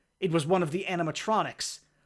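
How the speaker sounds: ordinary delivery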